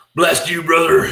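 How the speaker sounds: very loud, very high wrestler-style yell. Correcting another person's performance by showing how to read the next line, in a Hulk Hogan voice. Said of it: "His next line you got to read is Hulk Hogan".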